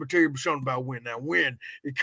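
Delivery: put-on voice with teeth showing. Doing a Gary Busey impression with teeth showing: Gary Busey impression. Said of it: "I gotta talk like this".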